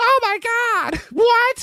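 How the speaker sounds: very high, clueless, bewildered announcer outburst, drawn out. Imitating a wrestling commentator who just shows up: imitating Jerry Lawler. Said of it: "show up and go".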